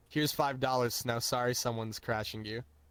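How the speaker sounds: ordinary talk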